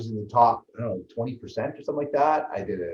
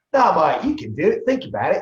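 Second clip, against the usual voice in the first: put-on Australian accent, slightly mangled, raised and higher; 6 semitones higher, 6 dB louder than usual. Quoting an Australian man urging him to try Ultraman, put-on Australian accent. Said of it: "I won't wreck his accent anymore".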